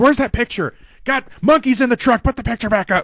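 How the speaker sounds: shrill, very high, over-emotional screaming. Retelling how Owens demanded the picture back: imitating Owens screaming. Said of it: "then he starts screaming".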